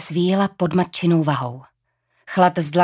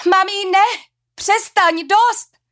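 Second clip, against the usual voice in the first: very high, drawn-out, pained outcry; 4 dB louder than usual. A daughter cries out to her mother, who is cutting her: crying out. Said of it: "vykřikla".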